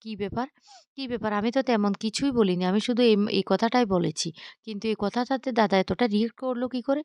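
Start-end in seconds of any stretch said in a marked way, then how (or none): none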